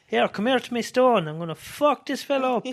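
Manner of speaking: high, loud, belted-out put-on Italian accent. Retelling Tony fuming after the match, in Tony's mock Italian accent. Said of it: "because that's how his Italian accent sounds".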